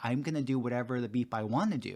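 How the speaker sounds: plain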